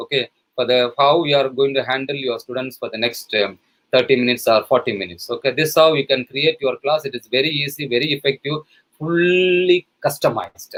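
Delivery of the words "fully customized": fully customized stressed, slow and raised. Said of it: "Underline the word fully customized".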